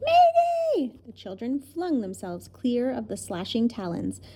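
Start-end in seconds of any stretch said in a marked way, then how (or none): 0.0-0.9 startled, very high, shrill scream. Narrator reads the Wiffle Bird startled out of her trance, screaming. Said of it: "she screamed".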